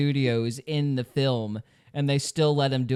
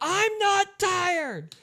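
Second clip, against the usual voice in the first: put-on shrill, very high little-kid yell. Joking about tired children at bedtime: imitating a child yelling. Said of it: "Wait till they start yelling".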